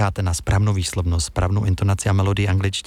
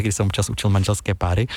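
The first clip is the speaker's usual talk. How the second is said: ordinary talk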